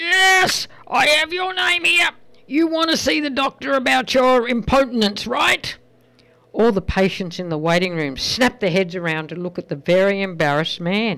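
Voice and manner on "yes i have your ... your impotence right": acted very loud, high, booming voice. Telling a story, acting out the receptionist speaking to a patient, retelling a very loud voice. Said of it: "in a very loud voice".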